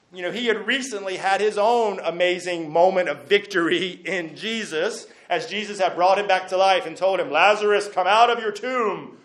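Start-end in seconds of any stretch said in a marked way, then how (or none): 7.3-9.0 grand, commanding preacher-style voice. Retelling Jesus calling Lazarus out of the tomb: booming Jesus voice. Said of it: "just like that, with a nice booming voice".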